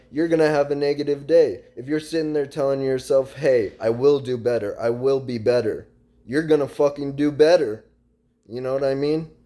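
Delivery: fired-up, earnest, passionate and emphatic. Speaking passionately to the guys listening: getting loud. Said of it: "I'm sorry I'm getting loud".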